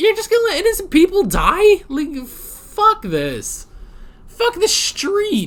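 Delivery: very high, swooping, worked-up angry rant. Ranting about the rules: angry, voice getting high-pitched. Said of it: "this is making me so mad that my voice is getting really high-pitched".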